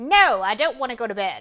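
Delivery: put-on disrespectful kid voice, barked at full volume. Speaker acts out a child refusing bedtime: imitating a disrespectful child. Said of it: "show me the disrespectful way".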